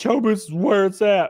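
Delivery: ordinary delivery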